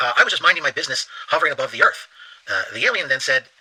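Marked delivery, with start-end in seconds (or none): none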